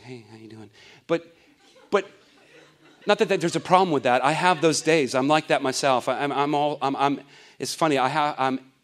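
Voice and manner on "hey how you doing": meek, mild, very soft, barely above a hush. Imitating the meek and mild people of the New Testament: imitating a meek, mild person. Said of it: "meek and mild people who were just like".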